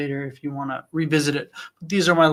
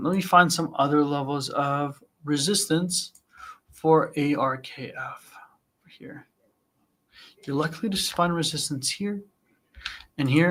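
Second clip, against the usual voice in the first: hushed, focused, whispered muttering. Finding resistance levels on a stock chart, whispering while trying to hone in. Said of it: "I'm like whispering".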